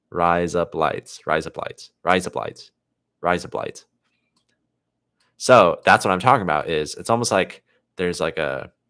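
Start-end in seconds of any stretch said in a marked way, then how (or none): 0.1-3.8 Australian-accented speech. Showing how a phrase sounds: australian accent. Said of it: "with an Australian accent".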